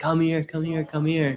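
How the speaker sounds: high-pitched, shouting yell. Showing how the devil calls loudly, unlike God: mock yelling. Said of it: "gonna be yelling".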